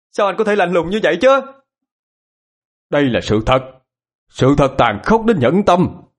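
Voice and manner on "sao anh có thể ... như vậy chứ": shouted, higher and faster. One of two women answers a man's cold remark, shouted. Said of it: "Mày hét lên".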